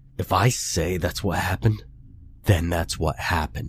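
low, hushed rasping voice close to panic. Jared speaks to Connor over the phone, low rasp, close to panic. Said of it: "he rasped, voice low and close to panic".

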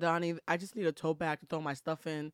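ordinary talk

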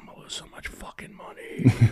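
whispered, barely voiced mutter under the breath. The speaker recalls their first two years in business, retelling a mutter under breath. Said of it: "under my breath".

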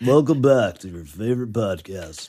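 rich, masculine delivery. Imitating how another speaker's voice sounds: imitating a manly rich voice. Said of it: "That's how you sound like a man".

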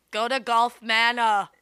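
put-on Austrian-accented action hero voice. Imitating parents sending someone away: Arnold Schwarzenegger voice. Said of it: "That sounded like Arnold Schwarzenegger".

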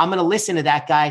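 normal talking voice

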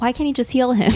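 normal talking voice

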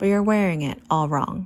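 ordinary delivery

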